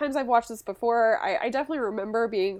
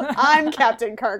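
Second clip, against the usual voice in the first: put-on indignant tone, louder; 6 dB louder than usual. Retelling how William Shatner reacted to the kiss: imitating William Shatner. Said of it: "that was Will Shatner d-, being like".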